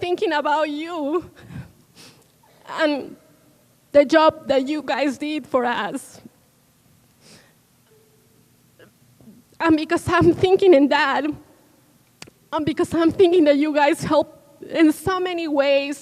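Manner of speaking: crying while talking, tearful. Thanking people for the job they did, crying while talking. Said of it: "I'm crying because I think of my students".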